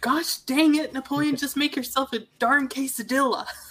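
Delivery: put-on high-pitched grandma voice. Joking about tortillas with others, Napoleon Dynamite grandma impression. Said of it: "It's like the grandmother from Napoleon Dynamite".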